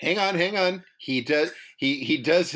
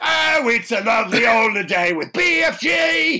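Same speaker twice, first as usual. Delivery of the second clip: terrible put-on Cockney accent, loud and high; 6 semitones higher, 6 dB louder than usual. Joking about the BFG, a bad Cockney accent. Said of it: "Definitely one of the worst Cockneys I've ever heard".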